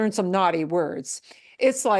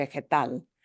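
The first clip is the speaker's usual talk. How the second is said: vegetal with stress punched on last syllable -tal; 6 semitones lower, 5 dB quieter than usual. Explaining why no accent mark is needed: stress on last syllable of vegetal. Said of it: "we punch the end".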